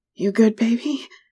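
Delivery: breathless, pitched way up. A lover asks close against the narrator's ear, breathlessly. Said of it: "You asked breathlessly against my ear".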